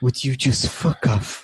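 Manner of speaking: barely voiced, hushed whisper under the breath. A player's character attacks, whispering in Fives voice. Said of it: "I whisper".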